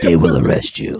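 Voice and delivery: gruff, very deep superhero voice, dropped way down. Switching into his Batman voice mid-conversation: Batman voice. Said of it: "In my Batman voice".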